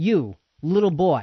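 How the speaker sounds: put-on disdainful villain voice. Retelling what Goliath says to David: imitating Goliath's utter disdain. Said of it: "with this utter disdain".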